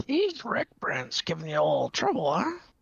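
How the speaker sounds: sly, knowing, quiet confiding aside. In a game scene, a character says this to a woman under the breath. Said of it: "just under my breath".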